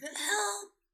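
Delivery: very high, dry, parched rasping cry. Describing a scene where a character's throat is dry, imitating Dean rasping. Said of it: "rasping out".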